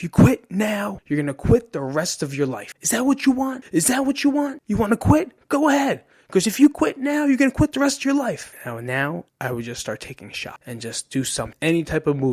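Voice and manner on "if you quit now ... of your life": play-acted mean coach screaming, very high, rising. Retelling a wrestling coach yelling about quitting: imitating a coach yelling. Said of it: "And he's yelling".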